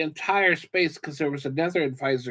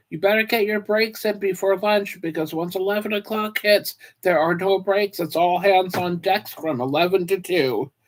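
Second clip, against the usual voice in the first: put-on manager voice, yelling, called out, pitched up; 5 semitones higher than usual. Describing what managers shout at crew members before lunch: imitating a manager yelling. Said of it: "the managers will yell at the crew members".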